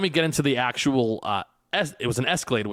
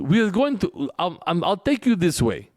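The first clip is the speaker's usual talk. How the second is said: halting, pitched-up taxi driver voice with ums; 6 semitones higher, 4 dB louder than usual. Retelling what the Uber driver said about the traffic: imitating the Uber driver Dimitri. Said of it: "I swear this is how he sounded".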